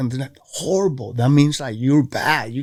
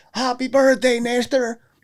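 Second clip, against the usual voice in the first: put-on yell, much higher pitch; 10 semitones higher than usual. Speaker recounts a guy yelling a birthday greeting at him: retelling a yell. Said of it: "the guy was there like yelling".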